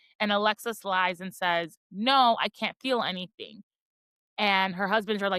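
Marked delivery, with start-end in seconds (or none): none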